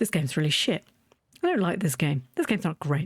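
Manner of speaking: low, fed-up, bored, no-fun grumbling tone. Retelling how it sounds when not having fun: imitating own bored voice. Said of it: "it's very clear in my voice when I'm not having fun".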